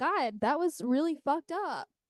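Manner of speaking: ordinary delivery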